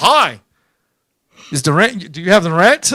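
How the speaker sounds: very low, badly dubbed martial-arts film English. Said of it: "speaking that dub English that they do in the Chinese movies".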